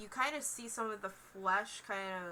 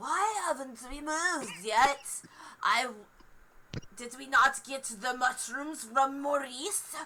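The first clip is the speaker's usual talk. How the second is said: put-on high, loud old hag voice; 4 semitones higher, 7 dB louder than usual. Voicing an old ragged woman with a stick: old hag voice. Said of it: "You're doing the voice".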